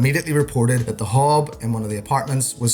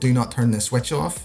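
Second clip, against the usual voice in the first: ordinary delivery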